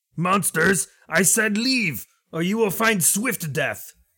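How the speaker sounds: shrill, very high yelling. Narrator voicing a figure who yells at the group once again: yelling. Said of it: "You'll hear him yell something once again".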